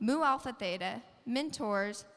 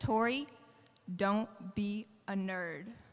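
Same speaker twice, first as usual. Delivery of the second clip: deadpan, level, slow droning monotone; 2 semitones lower than usual. Retelling what her dad said to her, imitating his flat monotone. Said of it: "straight-faced, monotone, dead in the eyes".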